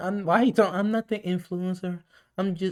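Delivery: barely-there, soft-spoken, high little voice. Retelling what she said, imitating her soft voice. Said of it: "is her voice that soft?".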